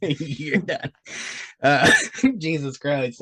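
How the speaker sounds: talking through laughter. Trying to read notes aloud with another speaker, laughing while talking. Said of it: "I can't even fucking stop laughing".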